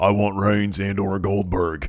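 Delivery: put-on slow, drawling southern accent. Retelling a wrestler's backstage line: Braun Strowman southern accent. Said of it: "he has that southern accent going".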